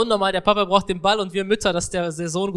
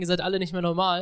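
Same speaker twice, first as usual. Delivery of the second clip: ordinary talk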